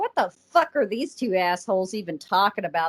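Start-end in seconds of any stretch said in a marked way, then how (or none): none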